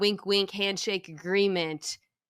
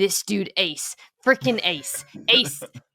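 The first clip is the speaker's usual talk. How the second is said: irritated grumbling mutter under the breath; 3 dB louder than usual. Retelling walking around the house annoyed: imitating muttering under breath. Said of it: "muttering under my breath".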